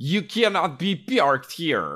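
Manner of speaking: bad fake Russian accent, very high, shrill, loud. Retelling a scene, play the guy who startles them, in a fake russian accent. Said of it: "a guy with a Russian accent".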